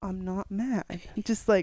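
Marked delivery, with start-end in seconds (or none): 0.0-0.8 put-on clenched-teeth speech, quieter. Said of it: "I'm just talking through my teeth".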